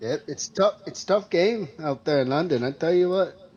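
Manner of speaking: slight Canadian accent. Commenting on a tough game in London: slight Canadian accent. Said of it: "Is that a Canadian accent?".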